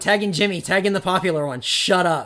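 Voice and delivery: ordinary talk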